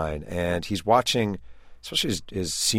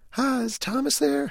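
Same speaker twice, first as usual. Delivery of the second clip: very high, slow falsetto voice. Retelling a man phoning a teammate's home on Thanksgiving: high-pitched falsetto voice. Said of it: "he goes in his high-pitched voice".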